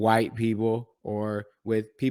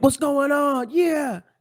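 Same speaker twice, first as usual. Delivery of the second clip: very high, slow, bright, happy cheery voice; 4 dB louder than usual. Retelling how they sound in the morning: imitating own cheerful morning voice. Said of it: "happy in the morning".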